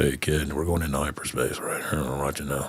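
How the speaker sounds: deep, soft, low voice. A speaker with a cold, noticing the resemblance, does a Han Solo impression. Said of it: "Sounds like Han".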